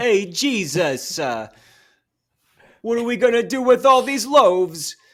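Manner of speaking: put-on very loud, high-pitched, slow, drawn-out New York Italian accent. Doing an impression while discussing a film: Harvey Keitel impression. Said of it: "I'm gonna have to do my Harvey Keitel now".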